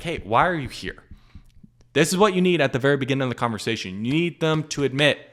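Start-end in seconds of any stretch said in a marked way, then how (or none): 0.0-1.0 genuinely bewildered, confused and puzzled tone. Showing how to ask a prospect the question: confused tone. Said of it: "in a confused way of like".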